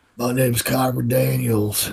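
put-on rugged rural country accent. A character introduces themself by name, in a country accent. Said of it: "Why do I have a country accent".

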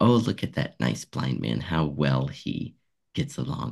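ordinary delivery

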